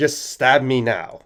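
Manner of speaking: slow, deliberate announcing delivery.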